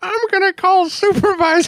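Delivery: put-on very high, childish twelve-year-old kid's voice. Retelling a twelve-year-old player who pulled them over: imitating a twelve-year-old kid. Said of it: "a twelve-year-old".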